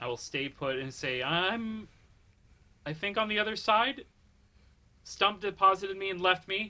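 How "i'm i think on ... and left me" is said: loud shouting, calling out. Left alone on the other side of the hallway, calling out to the group, shouting into the darkness. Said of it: "I'm shouting into the darkness".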